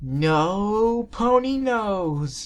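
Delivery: eerie spooky tone, very high, long drawn "no". Rainbow Dash answers Twilight from the shadows, scaring the other ponies, in a creepy voice. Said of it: "Rainbow Dash said in a creepy voice".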